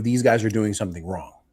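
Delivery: ordinary delivery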